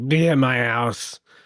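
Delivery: put-on lazy, very slow, slurred drunk voice. Describing someone who sounds like a drunk dad: imitating a drunk dad. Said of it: "He sounds like kind of like a drunk dad. Like".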